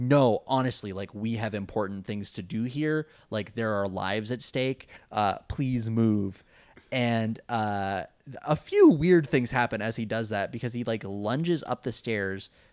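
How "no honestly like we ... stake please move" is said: ordinary talk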